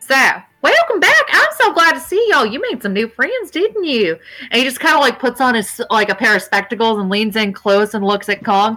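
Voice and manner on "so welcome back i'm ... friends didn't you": high, swooping put-on character voice. Voicing Gus greeting the players at the door: Gus's voice. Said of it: "let me get his voice back".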